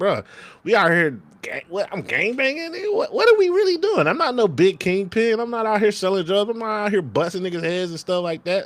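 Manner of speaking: high-pitched exasperated ranting voice.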